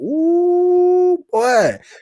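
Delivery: high, loud, drawn-out "ooh". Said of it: "I said".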